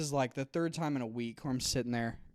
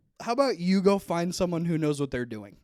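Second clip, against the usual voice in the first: loud, play-acted, really angry voice; 4 semitones higher, 5 dB louder than usual. Retelling a comeback to a nurse struggling with a needle: imitating an angry retort. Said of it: "I said it kinda like that 'cause I was really mad".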